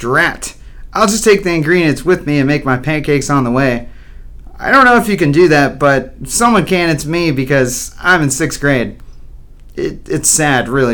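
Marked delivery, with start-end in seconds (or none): none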